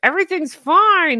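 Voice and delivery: high, loud, pushed out through gritted teeth. Host plugging show merch says its slogan through gritted teeth like Kermit. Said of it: "You have to say that through gritted teeth, a la Kermit".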